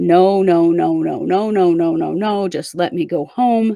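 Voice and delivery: plain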